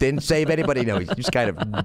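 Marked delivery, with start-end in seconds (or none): 0.0-0.8 angry yelling, higher pitch. Retelling how the father yelled after the escape: imitating Dad yelling. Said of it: "my dad is just yelling at me".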